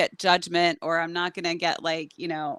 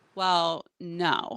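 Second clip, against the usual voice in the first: put-on reflective, thoughtful pause; 4 dB quieter than usual. Retelling a person's answer to a question, imitating a reflective pause. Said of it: "such a reflective pause".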